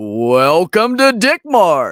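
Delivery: put-on announcer voice, very loud, very slow, booming. Speaker does a shop's welcome line in an announcer voice. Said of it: "I'm gonna do it in my announcer voice".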